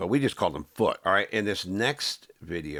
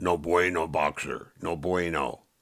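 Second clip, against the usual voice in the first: dismissive, slightly lower imitated voice. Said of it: "he talked like this".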